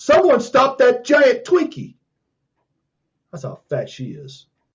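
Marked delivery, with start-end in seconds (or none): 0.0-2.0 put-on very high, yelled cry. Telling a your-mama joke, imitating someone yelling. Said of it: "she yelled out".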